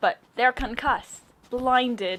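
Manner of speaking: loud, poorly done fake Australian accent. Commenting on a match, voicing a voice line in a bad Australian accent. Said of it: "I cannot do a good Australian accent".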